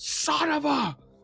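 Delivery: furious, angry outburst. Voicing a character whose gun jams in a fight: angry outburst. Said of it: "he slams it across the ground with this anger".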